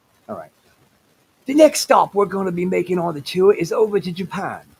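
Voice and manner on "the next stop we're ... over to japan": put-on British nature documentary narrator voice. Repeating the tour announcement when asked to say it again: Alfred Hayes voice. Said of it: "Say that again?".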